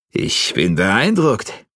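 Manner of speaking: astonished, surprised tone, close to stunned. After a sweaty bout, one fighter speaks to the other, surprised, almost shocked. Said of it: "er klang überrascht, fast schon schockiert".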